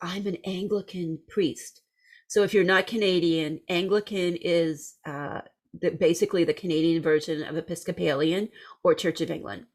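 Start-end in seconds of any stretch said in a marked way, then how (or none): 0.0-1.8 soft half-whisper, right up close. Retelling how a woman leaned in close and told the speaker something: retelling a half-whisper. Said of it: "and she whispers".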